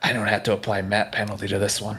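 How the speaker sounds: whispering. A game master voices an attacker whispering to a player's character, whispering. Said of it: "he whispers to you".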